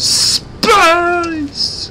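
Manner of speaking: high, loud, excited yell.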